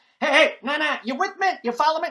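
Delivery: very fast auctioneer-speed patter, very high and loud. Doing Ross Perot on a call-in radio show: Ross Perot impression. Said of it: "He talked like, uh, an auctioneer on a triple espresso".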